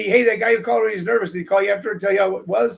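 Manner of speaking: ordinary talk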